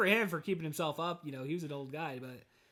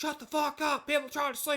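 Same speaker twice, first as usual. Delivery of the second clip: put-on scream, much higher pitched; 10 semitones higher, 3 dB louder than usual. Retelling how an old man screamed out the window: imitating someone screaming. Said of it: "he just screams out the window".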